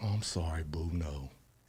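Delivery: tender, very soft, gentle voice. Showing the different ways a word can be used: gentle tone. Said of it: "it be gentle. ... You see how I got gentle on it?".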